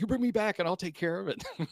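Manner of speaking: loud, high, furious yelling. Retelling a panelist yelling after he froze on the first show, retelling a man yelling. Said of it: "he's yelling at him".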